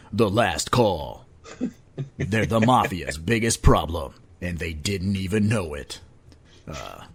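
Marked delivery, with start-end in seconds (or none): 0.1-5.9 very deep movie-trailer voiceover. Resuming a movie trailer read: movie trailer voice. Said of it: "get my voice back on".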